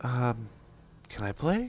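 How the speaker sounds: put-on sweet, sing-song child voice, swooping up and down. A father imitating his son asking to join the game, imitating a kid's nicest voice. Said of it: "with the nicest voice".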